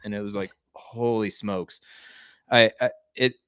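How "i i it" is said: stumbling, halting, broken-off stuttering start. Describing losing all project data when the old platform shut down, stuttering. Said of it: "so I'm stuttering".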